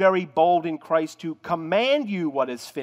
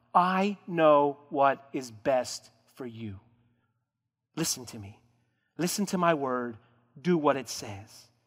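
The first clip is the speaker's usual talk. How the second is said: put-on begging, lower and slower; 3 semitones lower, 6 dB quieter than usual. Voicing what he can say to you all the time, acting out a begging voice. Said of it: "In that begging, begging voice".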